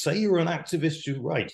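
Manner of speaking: emphatic stress on you're, pitched high, falling after. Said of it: "If you want to say".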